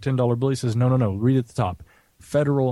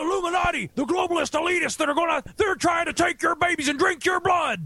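put-on ranting voice, higher. Performing a line after another speaker asks for an Alex Jones voice. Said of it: "You have to say that in your Alex Jones voice".

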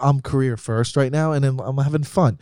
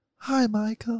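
put-on high, sweet, gentle British accent; 9 semitones higher, 6 dB quieter than usual. Imitating the mother's voice, imitating mom's british accent. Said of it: "she's more like".

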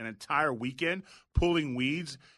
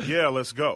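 put-on very calm voice, louder; 5 dB louder than usual. Retelling an answer to a threat to go outside: imitating own very calm reply. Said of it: "said in a very calm".

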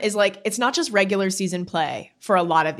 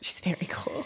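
hushed, very quiet whispered aside; 12 dB quieter than usual. Talking about an upcoming interview guest, whispering. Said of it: "Why are we whispering?".

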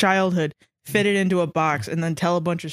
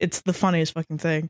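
ordinary delivery

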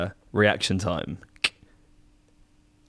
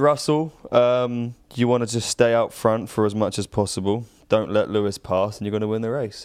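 plain

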